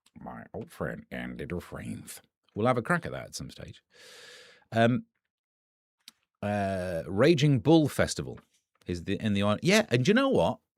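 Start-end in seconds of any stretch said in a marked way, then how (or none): 0.2-2.0 very low, very soft, deep hushed narrator voice. Prompted by a co-host to do Morgan Freeman: Morgan Freeman impression. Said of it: "Morgan Freeman do it".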